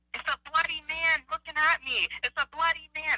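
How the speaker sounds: play-acted high, frantic, terrified scream. Retelling seeing a bloody man at a window: imitating own scream. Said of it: "Then I screamed".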